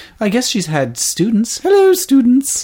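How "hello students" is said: put-on proper elderly British lady voice, higher and louder. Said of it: "What is your most proper Maggie Smith voice?".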